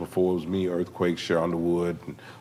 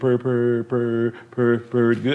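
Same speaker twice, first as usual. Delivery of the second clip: mock stutter holding words, higher and louder; 5 semitones higher, 5 dB louder than usual. Retelling a drugstore clerk's answer: imitating a stutterer holding words. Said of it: "he stuttered, but he held his words".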